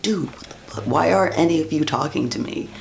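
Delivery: mock exasperated outburst. Retelling asking the group why nobody would talk to them, frustrated outburst. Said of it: "I started to get more and more frustrated".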